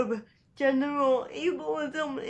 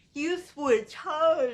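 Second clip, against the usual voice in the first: mock heckling call, toned down, like a man shouting; 2 semitones higher than usual. Retelling what a guy shouted during a walk: imitating a guy shouting. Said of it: "this one guy shouted at me".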